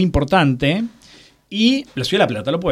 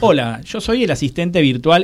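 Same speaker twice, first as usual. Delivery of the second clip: ordinary talk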